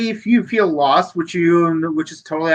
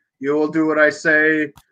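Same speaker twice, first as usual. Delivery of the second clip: put-on booming angelic voice; 2 semitones lower than usual. Retelling a character's claim to be the Metatron: Alan Rickman voice. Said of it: "I am definitely Alan Rickman".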